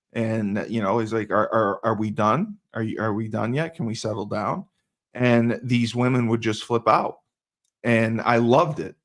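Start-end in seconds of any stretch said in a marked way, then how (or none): 1.3-4.6 put-on calm, flat, unreacting voice. Retelling how a friend answered angry dates: imitating Uwe speaking calmly. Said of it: "He would speak calm".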